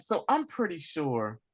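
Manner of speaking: usual speaking voice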